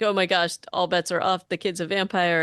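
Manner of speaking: plain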